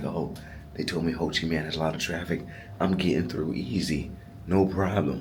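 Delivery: ordinary delivery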